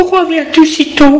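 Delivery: quavering, unsteady, very high trembling voice. Narrator reads Mimi answering the man who has just appeared, in a trembling voice. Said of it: "Elle lui dit d'une voix tremblante".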